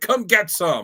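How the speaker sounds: high, yelled, play-acted goading tone. Picturing a comic cover character yelling at a foe: imitating Namor yelling. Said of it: "yelling at him, like".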